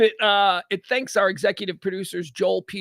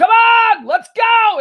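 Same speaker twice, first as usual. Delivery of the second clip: very loud, high, booming, drawn-out yell; 11 dB louder than usual. Retelling calling a dog to come from a backyard, re-enacting yelling. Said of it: "And I'm yelling".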